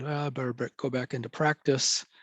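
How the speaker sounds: ordinary delivery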